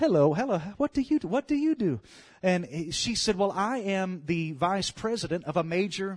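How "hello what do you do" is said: attempted put-on British accent. Retelling a woman's greeting to a man on a plane, in a British accent. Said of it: "That's my best British voice".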